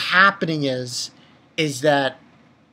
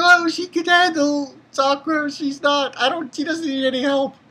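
tearful pleading tone, higher pitch; 9 semitones higher than usual. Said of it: "And she's crying".

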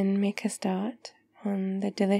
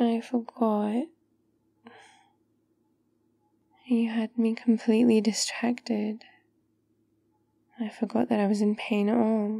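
sad, sorrowful, downcast tone. In a roleplay, remembering a forgotten pain after being distracted; sad.

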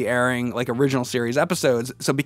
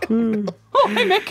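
put-on weird mousy creature voice, much higher; 10 semitones higher than usual. Asked if he changes his voice to a mousy creature, speaker shows it: weird mousy creature voice. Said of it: "you change your voice to some weird mousy".

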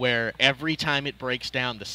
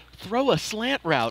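acted-out screaming, loud; 8 semitones higher than usual. Retelling screaming at the TV during the game: retelling a scream. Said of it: "I'm screaming at the T V".

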